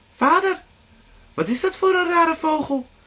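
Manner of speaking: put-on very high, loud, amazed, childlike surprise. Children ask their shepherd father about a strange bird, surprised. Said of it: "vroegen de kinderen verbaasd".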